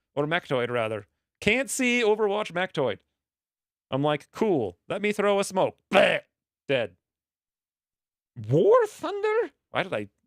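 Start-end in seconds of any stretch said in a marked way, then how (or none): 8.5-9.5 cracking, breaking voice pitched very high. Player talking with other players during a game; voice cracking. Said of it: "My voice is cracking like a little girl today".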